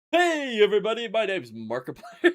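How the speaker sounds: belted, big showman voice, swinging wide. Doing an intro on request: Markiplier intro impression. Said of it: "Do the Mark intro".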